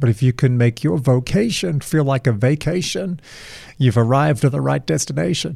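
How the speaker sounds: American-accented delivery. Delivering a cliche that sounds very American, in a put-on American accent. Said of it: "so I'll give it an American accent".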